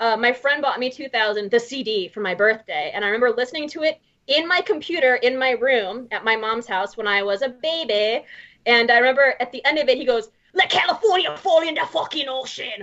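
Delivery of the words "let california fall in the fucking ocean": play-acted fierce, aggressive outburst, held in. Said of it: "really aggressively".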